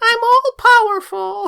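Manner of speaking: shrill, very high, belted cartoon voice. Trying a character voice that sounds like Pinocchio from Shrek: Pinocchio from Shrek voice. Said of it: "I sound like the, um, Pinocchio at Shrek".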